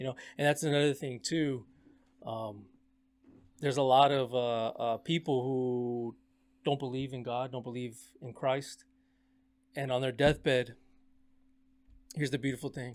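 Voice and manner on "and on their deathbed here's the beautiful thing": voice catching, getting choked up mid-sentence. Talking to the guys, getting choked up. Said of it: "I'm getting kind of choked up too".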